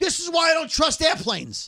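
sudden, high-pitched yelled outburst. Retelling a man at baggage claim complaining about airplanes: imitating a yell. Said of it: "he yells out".

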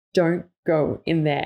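mock-serious tone. Speaker retelling what people in homes they visit say, mock-serious warning. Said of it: "they say it in a really serious tone".

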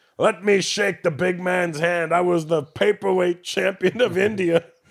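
acted-out, loose, tipsy, drunk boasting voice. Retelling how a boozed-up father asked to shake the big man's hand: imitating a drunk dad. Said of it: "My dad got boozed up".

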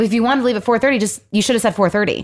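play-acted, fast, a little defensive tone. Retelling her own reply about the agreed time: imitating own defensive reply. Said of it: "I got a little defensive".

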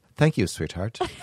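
ironic, syrupy, tongue-in-cheek sweet tone. Showing how he calls a woman sweetheart ironically. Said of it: "I'll say like that".

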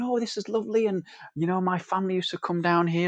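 put-on voice of a little old woman. Retelling elderly visitors who opened the meeting room door: imitating a little old visitor. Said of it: "a little old lady and a little old man going".

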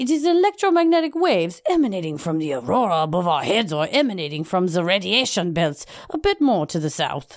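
put-on French accent. Reading a physics professor's quote aloud in a put-on French accent. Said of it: "I gotta practice my French accent".

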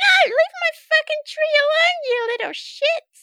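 very high-pitched elf voice, calling out. Game master voicing an elf in a tree, calling down to the players; elf calling out. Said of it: "Call out".

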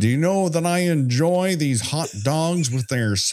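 bad fake American accent. Joking about how Americans get portrayed, doing a Monty Python American impression. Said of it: "a Monty Python impression of what an American is".

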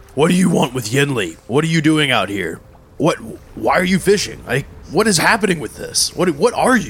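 gentle calling-out voice. Playing a game, confronting a ghost on another boat, screaming across the boats. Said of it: "I'm going to scream across the boats".

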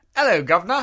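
put-on British-accented, high and loud. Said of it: "give me a".

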